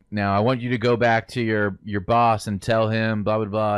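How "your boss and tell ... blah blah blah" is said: ordinary talk, nothing marked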